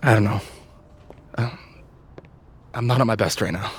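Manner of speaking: out of breath, low, panting through it. A video game character speaks aloud, panting.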